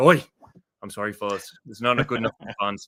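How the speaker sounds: put-on English accent, gangland-drama style. Speaker acts out what a man said to the players, in a Peaky Blinders British accent. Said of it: "Peaky Blinders".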